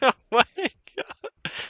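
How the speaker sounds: very high-pitched voice, laughing while talking. Reacting to a mistake during a game, laughing while talking. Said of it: "I'm laughing".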